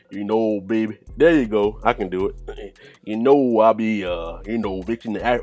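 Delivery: clumsy, terrible put-on Louisiana accent. A speaker tries out an accent mid-conversation: bad Louisiana accent. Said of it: "That bum ass accent".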